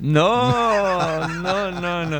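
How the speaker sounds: mock protest, put-on protesting tone.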